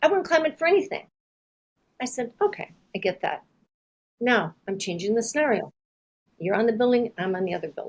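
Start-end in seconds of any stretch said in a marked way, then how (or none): 0.0-1.1 put-on, high, screamed, flat-out emphatic delivery. Retelling a man's final answer to his repeated offers, retelling a scream. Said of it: "And finally he screams out".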